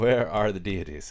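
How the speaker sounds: loud, provocative, sassy, sarcastic tone. Acting out God's question on the day of resurrection: sassy sarcastic God voice. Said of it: "Like a very sassy".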